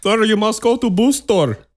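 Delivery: mock Indian accent. Ranting about a ruined Saturday, quoting one of those people in a mock Indian accent. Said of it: "do the Indian accent".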